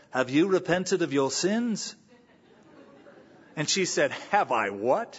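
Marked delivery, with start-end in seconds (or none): 0.2-2.0 put-on English accent. Retelling a story, the speaker quotes the pastor Malcolm Wilde in his English accent. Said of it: "said in his great English accent".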